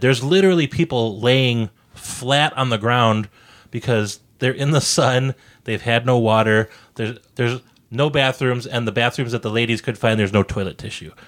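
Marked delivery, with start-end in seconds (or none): none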